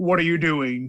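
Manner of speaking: very deep, low-pitched voice. Showing the voice expected from the goddess: very deep voice. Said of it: "a very deep".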